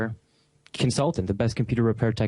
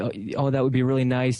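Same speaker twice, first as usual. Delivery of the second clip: usual speaking voice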